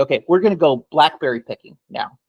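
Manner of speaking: usual speaking voice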